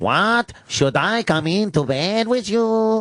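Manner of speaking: high-pitched put-on Spanish accent. Showing how to voice her character, in a spanish accent. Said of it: "do a Spanish accent when you do her?".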